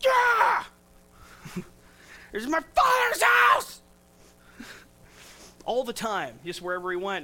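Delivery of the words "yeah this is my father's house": put-on furious yelling, very loud and high. Speaker describing a Jesus who flips tables everywhere, mock-angry Jesus yelling. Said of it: "he's always angry and he's stomping and he's yelling".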